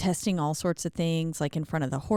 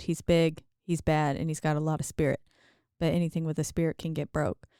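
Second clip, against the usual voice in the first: ordinary delivery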